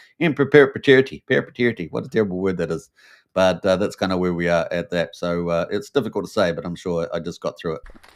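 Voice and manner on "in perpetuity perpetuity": loud, put-on Irish accent on perpetuity. Speaker repeats a tricky word, saying it in an Irish accent. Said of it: "I have to say it with the Irish accent there".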